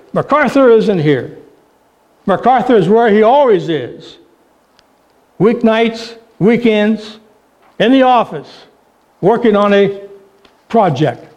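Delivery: put-on short, sour, resentful, angry, terse delivery. Speaker retelling a woman answering the boss's phone call, retelling a terse, bitter reply. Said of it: "in a very terse, angry, bitter voice".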